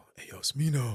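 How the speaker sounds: put-on breathy quiet tone. Retelling calling out to a performer near people: imitating own breathy quiet call. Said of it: "real, like, breathy like that".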